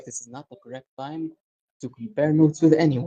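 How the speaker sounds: whispered voice. Retelling how a woman turned around, imitating someone whispering to herself. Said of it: "she's just mostly whispering to herself".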